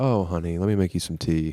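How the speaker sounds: put-on old man voice, gentle, comforting and consoling.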